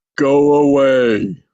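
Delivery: thunderous, deep, booming giant's bellow. Reading a scene where a giant answers from deep in a cave, thunderous giant voice. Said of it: "a thunderous voice".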